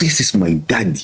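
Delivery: forceful delivery. Retelling what the three-year-old son said: imitating son saying it forcefully. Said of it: "A guy said it with so much force".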